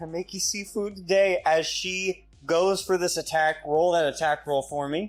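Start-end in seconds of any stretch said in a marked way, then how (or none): 0.0-1.4 small timid whisper, much higher pitch. A player voicing their halfling as she goes for an attack, in a timid little whisper. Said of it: "Timid, timid little voice of this halfling just whispering out".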